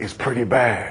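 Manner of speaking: low, hushed, ominous voiceover voice. Speaker closing a talk recalls a favourite TV show's opening, ominous voice. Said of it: "the ominous voice said".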